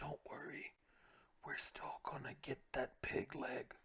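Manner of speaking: hushed whispered aside. Voicing a character who leans down to his dwarf companion: whispering to a companion. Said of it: "You can hear him whispering".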